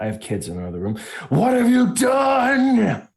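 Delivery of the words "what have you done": raging, very high, rising furious shriek. Speaking in character, turning to a companion and letting out a furious scream. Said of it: "turn to Silas and just scream".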